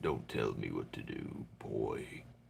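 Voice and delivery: forced, strained, breathy put-on whisper. Answering a comment about forcing the voice: Kratos voice. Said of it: "I'm trying to sound like Kratos".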